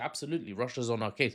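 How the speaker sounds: ordinary delivery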